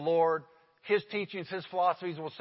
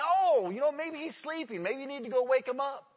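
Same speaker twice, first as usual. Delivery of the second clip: put-on mocking, taunting tone, raised pitch; 7 semitones higher than usual. Retelling Elijah taunting the Baal worshippers: imitating Elijah mocking. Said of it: "Elijah begins to mock 'em".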